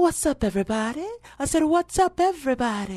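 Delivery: very high, loud, playful hostess voice. Showing how the spoof-show hostess Sharita talks, Sharita hostess voice. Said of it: "she talks like this".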